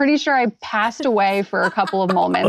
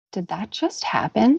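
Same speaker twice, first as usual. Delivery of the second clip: quiet, calm, still, serious, understated; 3 dB quieter than usual. Retelling what the quiet, serious dad said: imitating someone speaking quietly and calmly. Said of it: "very quietly and calmly says".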